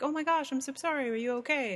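play-acted sweet sympathy. Imitating how people respond to writing about feelings: imitating a sweet, empathetic response. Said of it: "so sweetly, empathetically wanna respond with".

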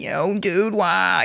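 put-on high, soft stoner voice. Showing a friend how the actor sounds in his role, in a Fran Kranz stoner voice. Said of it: "he's got a great stoner voice".

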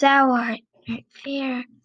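whispering. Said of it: "she whispered".

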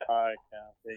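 put-on, glum, deflated, really dejected tone. Retelling a golfer's dejected phone greeting: imitating a real down voice. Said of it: "Real, real down, down".

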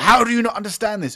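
very high-pitched, very loud, shrill screaming. Describing people screaming at the thing: imitating someone screaming. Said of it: "are either screaming at the thing".

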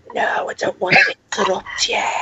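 hushed, soft whisper. Retelling what a mother whispered during the recording: imitating someone whispering. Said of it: "she was whispering to me".

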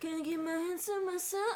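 mock breathy high-pitched voice. Showing how hard it is to copy Cassie's voice: imitating Cassie's breathy high voice. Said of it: "tried to replicate it".

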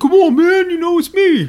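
very high, very loud, slow, wild cartoon voice. Retelling a moment from a fish show: terrible Tracy Morgan impression. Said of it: "that's a terrible Tracy Morgan".

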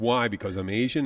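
ordinary talk

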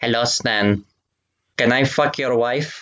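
put-on German accent in a fish voice. Klaus the fish greets a man by name, Klaus German fish voice. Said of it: "it's the German fish".

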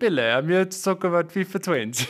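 terrible fake Italian accent, high, slow, drawn-out. Joking about a games conference, doing a bad Pele voice. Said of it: "That accent was actual garbage".

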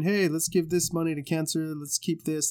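ordinary talk, nothing marked

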